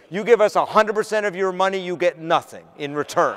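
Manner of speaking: ordinary talk, nothing marked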